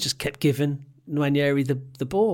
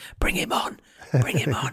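put-on footballer voice, whispered; 3 dB quieter than usual. Retelling a footballer whispering to someone on the bench: Jorginho whispering impression. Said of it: "like Jorginho whispering to Arteta on the bench".

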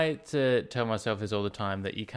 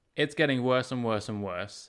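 plain

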